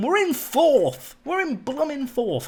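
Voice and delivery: keyed-up, excitable, high, swooping voice. Talking about the team being in fourth, excited voice. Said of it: "You might be able to hear it in my voice".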